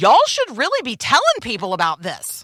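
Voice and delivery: mock proclamation, loud and high-pitched, for all to hear. Speaker retells what a woman loudly told Kim; retelling a loud proclamation. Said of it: "in a loud voice says".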